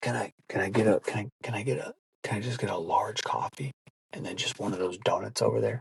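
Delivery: hushed, stumbling whisper with stammering restarts. Acting out a guy on the phone ordering coffee at the register: imitating someone whispering. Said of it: "they'll look at the person and they'll whisper".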